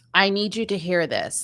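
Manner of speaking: plain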